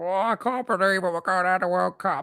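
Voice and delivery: bad, high-pitched Cockney puppet voice. Recalling with another speaker how Zippy talked, in a bad Cockney Zippy voice. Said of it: "That's how he talked".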